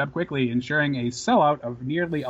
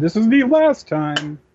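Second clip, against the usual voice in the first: announcer voice, loud, slow and deliberate; 4 semitones higher, 8 dB louder than usual. Quoting what was said at the start of the show: Michael Cole impression. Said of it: "that's my Michael Cole impression".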